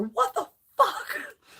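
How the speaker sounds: screaming squealed high but kept light. Retelling walking toward their injured mother at the airport: retelling screaming. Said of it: "So I was screaming as I'm walking towards her".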